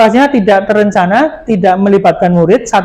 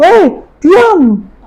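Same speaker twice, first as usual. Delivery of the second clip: high, raised, snapping scolding voice. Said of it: "si guru kan akan kayak gitu".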